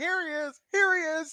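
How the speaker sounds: high, loud, alarmed screaming. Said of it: "it starts screaming".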